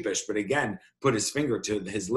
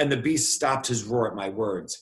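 plain reading voice

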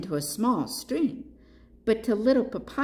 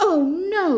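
very high, shrill, loud, alarmed outcry; 9 semitones higher, 6 dB louder than usual. Reading a story, the panda feels raindrops fall on his head: crying out. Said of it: "cried Papaya".

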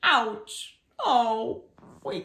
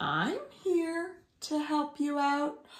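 drawling, drawn-out speech, slightly higher pitched; 5 semitones higher, 4 dB quieter than usual. Reading a story aloud, voicing Tiger's line: drawling Tiger voice. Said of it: "Drawled Tiger".

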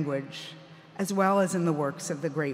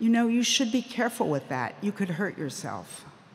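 very gentle, tender, mild delivery; 4 semitones higher than usual. Speaker quotes their father speaking to a ranting man with a knife, retelling gentle words. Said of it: "my father said very gently".

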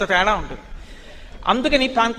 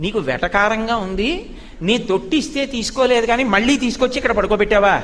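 ordinary talk, nothing marked

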